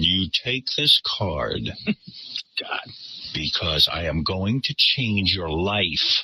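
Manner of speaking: slow, unhinged, crazy, insistent, deliberately pitched tone. Retelling a man pushing his card on a woman who refused, the speaker is imitating a crazy tone. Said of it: "crazy tone".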